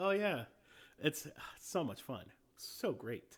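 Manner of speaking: mocking, sarcastic tone of voice. Recalling the sarcasm they could tell: imitating someone's sarcastic tone. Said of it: "I could tell the sarcasm. Like".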